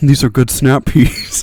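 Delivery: loud, deep, mask-muffled villain voice. Recalling a bit eating snap peas close to the mic: Kylo Ren impression. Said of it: "I did an impression of Kylo Ren".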